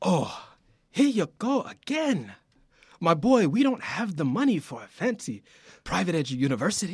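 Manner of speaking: soft attempted Italian accent, slipping toward Nigerian. Reading a scripted father's line to his son, in an attempted Italian accent. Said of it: "I'm trying to do this accent".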